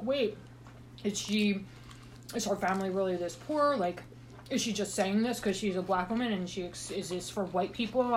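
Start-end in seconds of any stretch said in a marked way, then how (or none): none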